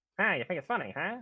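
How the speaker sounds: put-on old-time 1920s New York gangster voice. Joking with the other speaker after a game line: 1920s New York gangster voice. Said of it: "that's my New York, uh, gangster from nineteen twenty".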